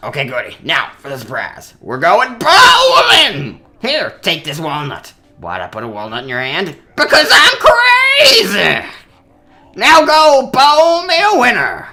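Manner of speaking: high, loud, throat-straining voice swooping up. Acting out Crazy Dave's lines in a throat-straining Crazy Dave voice. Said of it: "I'm gonna hurt my voice so badly using that voice".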